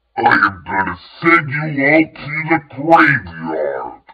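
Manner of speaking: deep, loud, roaring monstrous demon voice. Timothy, turned monstrous, charges toward the cliff edge, bellowing in a deep, demonic voice. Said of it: "he bellowed in a deep, demonic voice".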